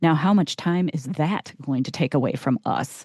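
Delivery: mock self-satisfied, cool, matter-of-fact tone. Retelling what a date said about her race: imitating a smug, matter-of-fact tone. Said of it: "he says it in such a, a matter-of-fact, smug way".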